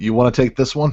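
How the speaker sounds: sarcastic, in-character tone. Turning to a companion in the game to ask: sarcastic in-character question.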